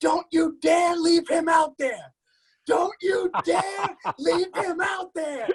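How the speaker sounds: put-on boozy, fervent, high drunken stadium fan heckling. Retelling a hammered fan at Yankee Stadium: imitating a hammered fan. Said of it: "he was hammered".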